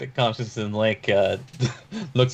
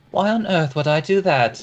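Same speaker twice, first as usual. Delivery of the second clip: higher-pitched woman's voice; 5 semitones higher than usual. Answering as Remy whether anything was stolen: Kalina's voice. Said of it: "Remy just responds in a woman's voice".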